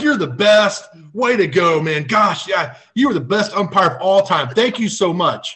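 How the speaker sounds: sarcastic, mocking, insincere heaping of praise. Retelling a friend mocking an umpire after a bad call: imitating sarcastic praise. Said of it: "I'm so sarcastic".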